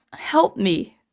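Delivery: holding back tears, close to crying. Retelling a comic scene on stream, quoting a character: holding back tears. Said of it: "I'm trying not to cry".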